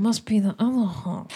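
muttering under breath. Voicing a character insulting a half orc: muttering under breath. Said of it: "she mutters under her breath".

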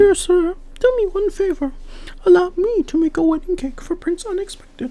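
very high, honeyed sweet voice. A girl approaches the clerk of the royal kitchen, in a sweet voice. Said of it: "said in a sweet voice".

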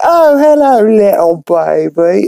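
terrible fake British accent, very high and slow. Recapping a cartoon scene where a girl greets a baby, bad British accent. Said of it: "bad British accent".

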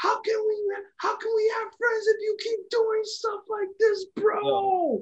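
high-pitched yelling. Recapping a wrestling segment, imitating Matt Riddle yelling. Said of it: "Matt Riddle is just yelling at him like".

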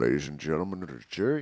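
put-on Scottish accent, low and fast.

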